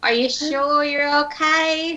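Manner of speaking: voice gone very shrill and high. Asking another player whether they are okay: very shrill voice. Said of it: "your voice went very shrill as you said that".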